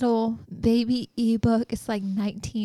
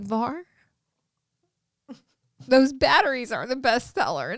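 words spilling out through laughter mid-speech. Retelling phoning someone while laughing hard, retelling laughing while talking. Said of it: "And I start laughing so hard".

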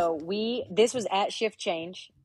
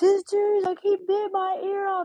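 put-on slow, wailing, crying scream; 14 semitones higher, 5 dB louder than usual. Retelling a handcuffed man on a cop car, imitating him screaming. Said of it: "he's just screaming".

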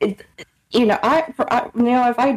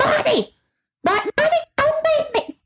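put-on old lady yell, higher. Retelling how an old lady called to her husband: imitating an old lady yelling. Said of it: "kept yelling at her husband".

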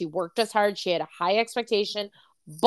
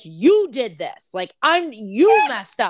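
put-on screaming voice; 4 dB louder than usual. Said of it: "scream at me".

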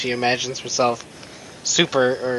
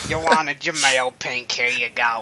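put-on monster lady voice. Acting out the Toei staff handing over train passes, in a Monsters, Inc. lady voice. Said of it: "She sounds like".

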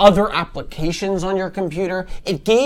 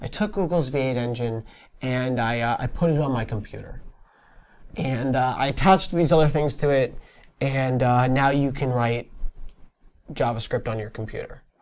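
mock matter-of-fact, quiet, offhand, casual delivery; 6 semitones lower, 5 dB quieter than usual. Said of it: "so casually".

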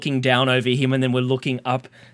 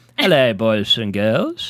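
put-on swooping, sing-song old grandpa voice; 3 semitones lower, 3 dB louder than usual. Speaker does the voice the other speaker hates, grandfather voice. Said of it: "Katie hates that voice that I do. This one".

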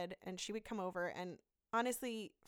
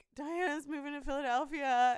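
mock tearful, high, loud sobbing voice; 7 semitones higher, 6 dB louder than usual. Retelling telling their husband the news in the bathroom: imitating themself crying. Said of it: "I'm like crying".

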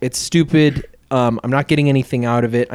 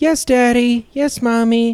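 very high, slow, drawn-out robotic monotone; 10 semitones higher than usual. Describing a film character who barely emotes, imitating Amy's robotic voice. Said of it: "And just kind of very robotic".

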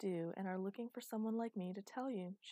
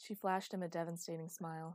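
ordinary delivery

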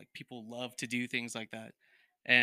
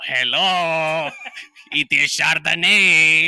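very loud, high fake Mexican accent, long drawn-out "hello"; 5 semitones higher, 16 dB louder than usual. Asked to read a line in Mexican, fake Mexican accent. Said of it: "read this in Mexican".

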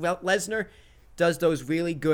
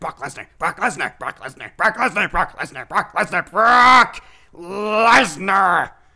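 loud, hyped wrestling-manager promo voice; 5 semitones higher, 8 dB louder than usual. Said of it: "was that your Paul Heyman impression?".

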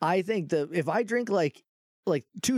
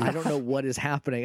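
ordinary delivery

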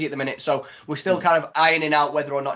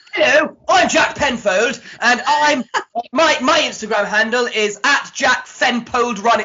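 high, loud, extra-posh voice; 9 semitones higher, 6 dB louder than usual. Imitating Jack giving his Instagram handle: posh imitation of Jack. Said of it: "that wasn't posh enough. Let me try again".

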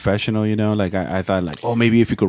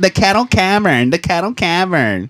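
grating, annoying fake voice, higher; 9 semitones higher, 4 dB louder than usual. Announcing they are live from the Caro Cavern, put-on annoying voice. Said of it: "annoying ass fucking voice".

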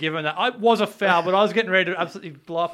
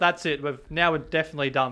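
ordinary talk, nothing marked

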